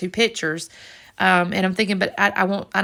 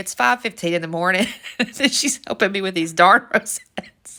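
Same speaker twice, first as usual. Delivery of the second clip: words spoken through laughter. Telling a story about a crafting mishap, laughing while talking. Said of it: "I need to compose myself".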